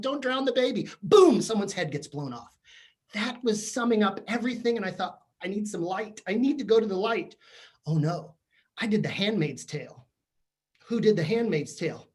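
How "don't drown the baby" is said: screaming and crying, pleading voice. Speaker retells watching a show and yelling at the television, retelling screaming while crying. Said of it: "I'm screaming at the television, crying".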